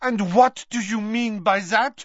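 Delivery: abrupt, sudden, loud outburst, voice shooting very high. Cutting in on a sobbing woman's words, sudden and loud. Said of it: "suddenly and loudly".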